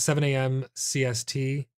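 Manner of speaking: ordinary talk, nothing marked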